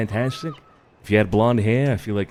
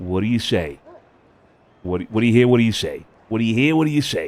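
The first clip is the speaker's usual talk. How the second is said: put-on New York accent. Coaching another person to repeat a phrase in the accent, New York accent. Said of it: "you trying to do the accent?".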